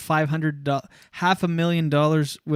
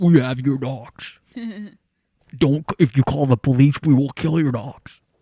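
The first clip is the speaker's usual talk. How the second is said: voice-changer disguised voice, louder; 2 semitones lower, 4 dB louder than usual. Joking about a ransom call, doing a voice-changer kidnapper voice. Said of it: "with a voice changer".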